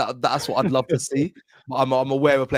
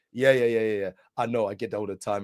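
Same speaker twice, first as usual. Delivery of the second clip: smooth, chocolatey, flowing voice; 3 semitones lower, 4 dB quieter than usual. Retelling meeting a football player: imitating Van Dijk's smooth chocolate voice. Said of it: "in his smooth fucking chocolate fucking voice".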